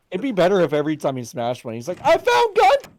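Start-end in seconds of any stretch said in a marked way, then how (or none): 2.0-2.8 shrill, loud, very high blurted yell. Imagining a game character smashing a vase and finding gunpowder: loud shout. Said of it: "just, like, loud".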